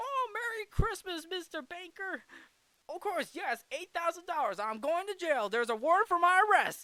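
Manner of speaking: acted-out thrilled outburst, very high and loud. Retelling a film scene where the character is excited to go to jail: imitating George Bailey's excitement. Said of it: "He literally outright says that in, in excitement".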